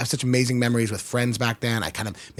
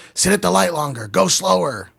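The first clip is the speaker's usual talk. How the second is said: mock high, rough screamed yell; 7 semitones higher, 4 dB louder than usual. Retelling what an angry driver yelled from his window: imitating someone screaming. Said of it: "just screaming at me".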